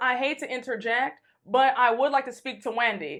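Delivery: normal talking voice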